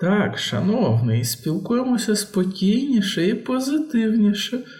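very high, unsure, tentative, hesitant voice. One of the fox girlfriends tries to calm a conflict before a crowd, hesitant suggestion. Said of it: "невпевнено запропонувала".

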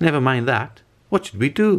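high, insistent, demanding voice. Morris Hope answers Adeline Hope's question, demanding. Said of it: "demanded Morris Hope".

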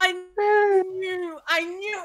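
high-pitched, teary mock crying wail.

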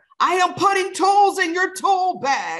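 acted shrill scream, very high and loud. Retelling a reply to a tween daughter: retelling own past scream. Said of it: "And I screamed back".

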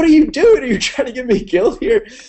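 high, loud, exasperated yell.

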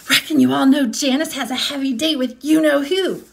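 loud, projected whisper. A girl on the school bus tells the other kids, in a loud whisper. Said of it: "Then in a loud whisper".

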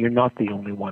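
plain

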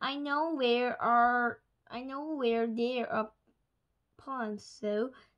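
plain reading voice

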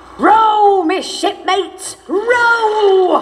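long, very high, very slow hollered yell. Narrator reading a one-armed man yelling to his shipmates: yelling. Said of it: "Yelled One-Armed Jake".

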